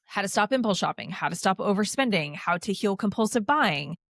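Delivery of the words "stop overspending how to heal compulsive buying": normal talking voice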